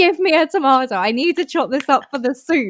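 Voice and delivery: loud, high-pitched shouting. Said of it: "I'm shouting at".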